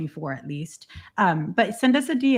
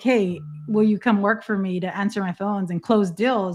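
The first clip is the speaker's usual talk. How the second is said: ordinary delivery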